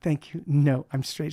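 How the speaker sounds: mock disdainful tone. Between songs, a performer repeats what a woman said to them, retelling a disdainful reply. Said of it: "She said it with such disdain".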